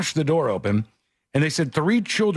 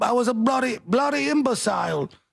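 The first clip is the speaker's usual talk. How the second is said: botched put-on British accent, very high and shrill; 9 semitones higher than usual. Retrying the celebrity's line after being told he's British: bad Russell Brand British accent. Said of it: "I can't do it".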